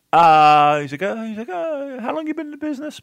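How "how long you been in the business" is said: very high-pitched, friendly voice. Retelling a locker room meeting, imitating Abdul the Butcher's high-pitched voice. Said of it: "Very, very high-pitched voice".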